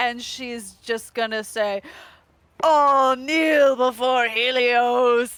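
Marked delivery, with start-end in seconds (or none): 2.6-5.3 very loud, booming, slow otherworldly voice. Voicing a character commanding creatures to kneel: voice from the beyond. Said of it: "a voice from the beyond".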